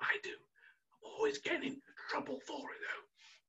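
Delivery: very soft, hushed whisper. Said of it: "I have to whisper that one".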